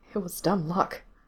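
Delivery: half-whispered, wretched, miserable tone. Narrator reading Gerard's reply to the one who found Mikey, in a miserable half-whisper. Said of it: "Gerard whispered back miserably".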